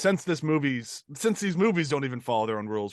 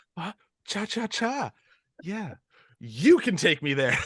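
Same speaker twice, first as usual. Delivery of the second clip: play-acted trembling, overexcited stammer, pitched high; 5 semitones higher than usual. Imitating a movie character excitedly answering Mia: imitating excited shaking voice. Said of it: "he just gets so excited. He's, like, shaking".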